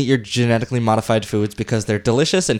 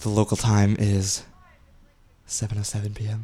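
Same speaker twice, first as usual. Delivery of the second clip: put-on radio announcer voice, quieter; 3 semitones lower, 6 dB quieter than usual. Signing off a radio show, joking: NPR announcer voice. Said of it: "I'm trying to be N P R".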